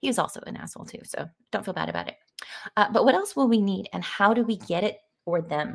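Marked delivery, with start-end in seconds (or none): none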